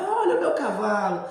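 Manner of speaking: put-on high, carrying shout, loud. Retelling a folk tale, a rider calls out while riding a jaguar: shouting. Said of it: "ele começa a gritar".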